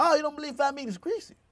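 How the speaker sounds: rapid-fire, very high, rattled-off delivery. Speaker recalls how their mom would say a saying; imitating mom talking fast. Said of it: "my mom would say real fast".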